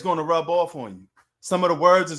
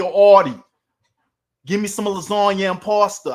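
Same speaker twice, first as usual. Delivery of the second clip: loud Italian New York accent; 3 semitones higher, 7 dB louder than usual. Mocking how people think New Yorkers talk, the speaker does a stereotypical Italian New York accent. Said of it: "a New York accent is, a, is sounding Italian".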